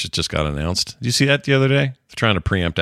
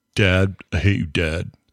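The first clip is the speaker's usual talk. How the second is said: slow, drawn-out emo necromancer character voice. Showing the others a picture of the character and voicing it: emo necromancer voice. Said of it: "He's just like".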